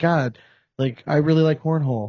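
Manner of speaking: ordinary delivery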